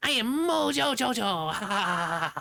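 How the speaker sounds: cute, very high, very slow, squeaky-sweet drawn-out delivery. Retelling an episode where a cartoon girl acts as a villain: Bubbles acting as Mojo Jojo. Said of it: "that's adorable".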